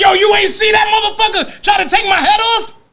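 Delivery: mock angry yelling. Retelling how he used to complain to the referee, imitating cursing out a referee. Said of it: "curse the referee out".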